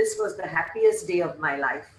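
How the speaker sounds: plain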